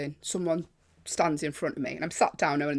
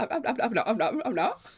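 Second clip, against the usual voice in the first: put-on panicked stammer, higher pitch; 7 semitones higher than usual. Retelling own reply to being shouted at: imitating own panicked stammer. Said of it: "a panic".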